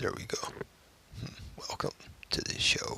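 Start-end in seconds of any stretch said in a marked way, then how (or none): 1.6-3.0 put-on deep voice, quieter. Opening the show after a false start, in a put-on deep voice. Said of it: "can't get the deep voice going".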